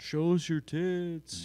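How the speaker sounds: mocking, very high, stretched-out, drawn-out yell. Retelling a heckler yelling at a comedian on stage: imitating someone yelling. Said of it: "the dragon shirt guy yells out".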